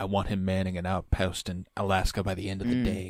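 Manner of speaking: put-on whisper. Quoting a movie scene where Henry Czerny whispers to a colleague: imitating Henry Czerny whispering. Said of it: "whispering to his colleague in that situation room".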